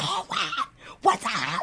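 mock frantic, high-pitched, drawn-out hysterical voice. Retelling her own phone call from a beauty supply store, reenacting screaming into phone. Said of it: "like screaming to Tony".

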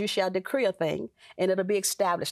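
ordinary delivery

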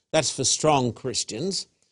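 usual speaking voice

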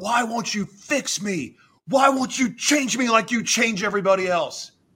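high, angry screaming with strained pleading tone. Retelling screaming at God while in jail: imitating own past screaming. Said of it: "And I was screaming at him".

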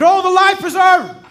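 very loud, shrill, high-pitched shouting. Acting out a person who fell overboard calling for help: imitating someone yelling. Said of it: "And they're yelling".

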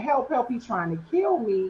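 desperate crying out, restrained and kept contained. Retelling running from an attacker toward home: retelling own screams for help. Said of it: "I'm screaming".

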